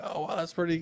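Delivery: mock all worked up, excited exclamation. Retelling meeting a fishing acquaintance on the river: retelling own excited words. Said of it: "I was all excited".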